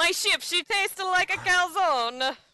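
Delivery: over-the-top Italian accent, very high pitch. Hosts joking about naming a segment Tony's top tip, ridiculous Italian accent. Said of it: "ridiculous Italian accent".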